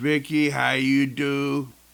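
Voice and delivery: put-on speaking with a French accent. Announcing a soccer hall-of-famer's return, greeting the honoree: french accent. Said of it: "My French accent threw you off".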